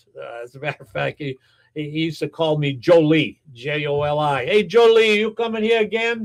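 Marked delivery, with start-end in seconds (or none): 4.5-6.3 raised-pitch, put-on Italian accent. Recalling a man from Sicily who called the speaker Jolie, in his Italian accent. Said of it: "he never quite lost his Italian accent".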